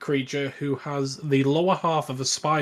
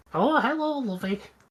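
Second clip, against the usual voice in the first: put-on old hag voice; 10 semitones higher than usual. Giving a quiz answer about an old lady who becomes the Hag: the Hag voice. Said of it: "was that meant to be the Hag?".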